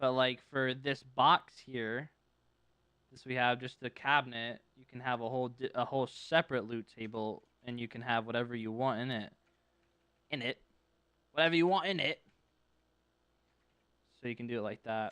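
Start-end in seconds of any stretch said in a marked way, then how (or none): 10.3-12.2 fake British accent, slipping out at times. Explaining a loot table setup, slipping into a put-on british accent. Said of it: "it was the British, you know".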